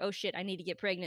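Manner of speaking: plain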